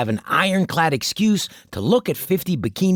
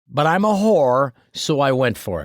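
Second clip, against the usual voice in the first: normal talking voice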